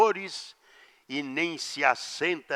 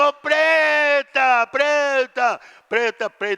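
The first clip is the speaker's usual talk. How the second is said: high-pitched, loud, drawn-out shouting call; 12 semitones higher, 10 dB louder than usual. Retelling being carried off on a theme-park ride: imitating own past yelling. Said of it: "e eu gritando".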